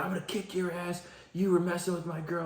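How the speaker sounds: put-on angry yelling. Recounting how a stranger showed up at the door and threatened them, acting out his rant. Angry raving yell. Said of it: "raving at my front door like a lunatic".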